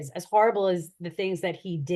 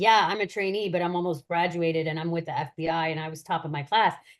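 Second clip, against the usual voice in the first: usual speaking voice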